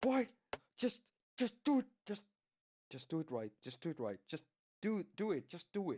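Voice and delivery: frustrated, irritated tone. Talking to yourself while trying to get the timing right, frustrated. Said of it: "I'm getting so frustrated right now".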